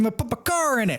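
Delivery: very high put-on American accent. Mimicking how American SUV drivers talk, using an American SUV-driver accent. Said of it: "that's my best American accent".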